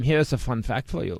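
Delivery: put-on German accent. Speaker mocking Germans to co-hosts, German accent impression. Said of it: "I was doing my impression of Germans".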